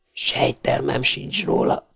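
whispering excitedly. Powell answers Donovan about a repeating message; excited whisper. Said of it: "suttogta izgatottan Powell".

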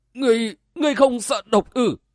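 high, trembling, frightened voice. The old nun questions her opponent: trembling, frightened question. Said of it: "run lên hỏi".

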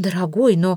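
plain

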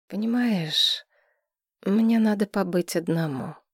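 timid. Asked by a woman to bathe together, he answers timidly. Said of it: "робко сказал Несина".

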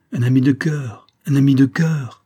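keen, fervent. Chavigny repeats his words to the captain, pressing his hand, eagerly. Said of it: "répéta vivement Chavigny".

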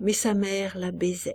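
ordinary delivery, nothing marked

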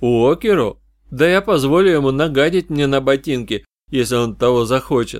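usual speaking voice

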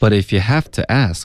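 emphasis landing on have. Pronunciation drill of an English sentence, stress on have. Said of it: "重音应该是have".

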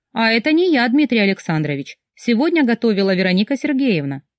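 sly teasing tone. The woman answers Dmitry Alexandrovich's praise at the table; mocking. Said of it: "лукаво улыбнулась и насмешливо сказала".

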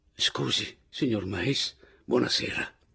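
ordinary delivery, nothing marked

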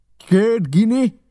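high, loud howl. Mary turns on Silver over a single gold coin, howling. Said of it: "Üvöltötte Mary".

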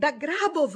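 very loud, high-pitched shout. Thomas shouts while pushing a woman out. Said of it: "gridò Thomas spingendola fuori".

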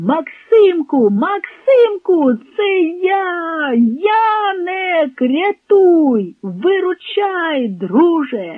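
wild, frenzied, high, frantic shouting. Narrator reads Yanyk calling to Maksymko from afar, frantic shout. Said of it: "закричав нестямно".

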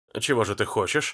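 usual speaking voice

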